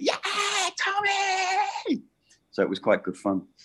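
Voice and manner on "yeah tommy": mock excited child shriek, very high, drawn out. Retelling how the kids greeted the pantomime cat: imitating kids screaming. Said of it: "they all screamed at me".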